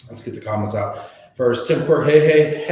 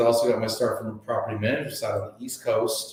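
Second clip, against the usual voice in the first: ordinary delivery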